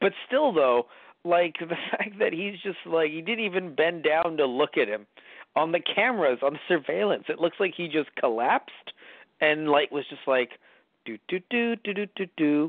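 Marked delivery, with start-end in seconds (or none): 11.0-12.7 higher, jaunty do-do-do show tune. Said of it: "fucking whistling a jaunty show tune".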